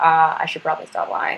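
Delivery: ordinary delivery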